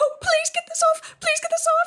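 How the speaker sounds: very high, loud, frantic, panicked shriek. Narrator voicing a character who spots a snake and jumps onto a bench, screaming. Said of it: "she screams and hops up onto the bench and says".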